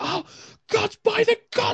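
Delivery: very high, terrified, panicked scream. Narrating voices heard screaming amongst the whispers, panicked screaming. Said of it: "you begin to hear screaming".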